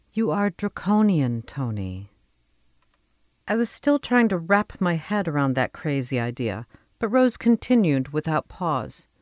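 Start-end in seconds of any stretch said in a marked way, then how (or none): 0.1-2.1 much more sympathetic, slow tone. Narrating a story, a character takes a deep breath and answers in a much more sympathetic tone. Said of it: "said in a much more sympathetic tone".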